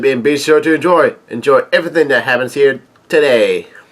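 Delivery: normal talking voice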